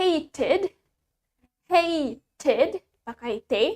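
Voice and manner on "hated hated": hated in British accent, true T sounded. Teaching learners the British pronunciation of a word, British accent. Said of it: "In British accent".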